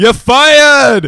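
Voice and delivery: acted shouting. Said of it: "just shouting".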